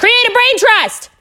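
very high shrill yell. Urging podcast listeners to create a brain trust: yelling. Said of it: "I had to yell".

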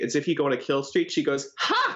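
ordinary talk, nothing marked

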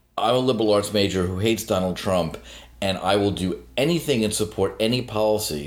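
normal talking voice

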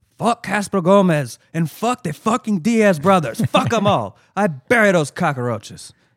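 loud, high-pitched, badly done Cuban accent. Quoting Tony Montana in a horrible Tony Montana impression, Cuban accent. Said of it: "that's a horrible impression of a man doing a questionable Cuban impression himself".

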